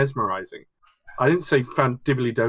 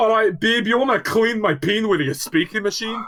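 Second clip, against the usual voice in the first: put-on Scottish accent, pitched up, flirtatious delivery; 8 semitones higher than usual. Joking about how a Scottish chat-up line sounds: mock Scottish accent. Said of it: "Or in Scotland, you go".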